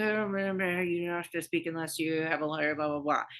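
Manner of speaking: dull, bored, flat procedural monotone drone. Mimicking how rights are read to a suspect, imitating a boring monotone. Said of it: "in a very boring way or like monotone".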